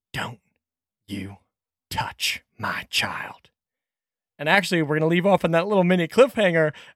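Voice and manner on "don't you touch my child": soft, slow, hushed, drawn-out whisper. Voicing a character leaning in with a bolt at someone's neck: whispering. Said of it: "as Debbie leans in and whispers".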